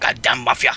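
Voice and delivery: bad put-on Chinese accent. Voicing a mumbling character overheard at night: bad chinese accent. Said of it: "I'm terrible with the Chinese accent".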